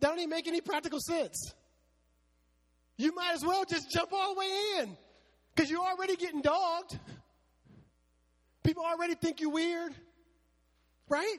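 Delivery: high-pitched preacher-style cry. Speaking to the church community about persecution: screaming. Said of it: "I'm sorry, I'm screaming".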